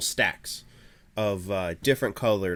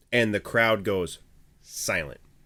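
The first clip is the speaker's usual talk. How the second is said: ordinary talk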